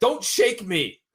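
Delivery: very high, indignant, angry protesting outburst. Retelling a scene where Ben argues: imitating angry Ben. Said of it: "He's angry Ben once again".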